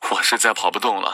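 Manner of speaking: ordinary delivery, nothing marked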